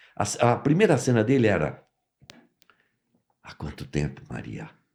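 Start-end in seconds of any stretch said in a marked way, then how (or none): 3.4-4.7 very soft, hushed, pianissimo delivery. Retelling an actor's first line after the director asked for it very soft. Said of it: "E ele falava nesse tom".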